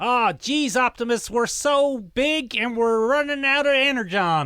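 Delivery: high, loud voice of a giant robot. Telling a made-up Transformers story, speaking as Wheeljack to another robot: Wheeljack Transformers voice. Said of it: "give me a Transformers voice and I'll try and do it".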